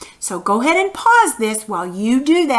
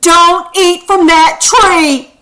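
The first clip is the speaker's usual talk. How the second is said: very loud, slow, forceful and emphatic delivery; 6 semitones higher, 9 dB louder than usual. Showing how to read a sentence ending in an exclamation mark, strong forceful command. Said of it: "you need to read it like this. ... that's a command. ... It's strong feelings".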